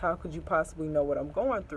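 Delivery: ordinary delivery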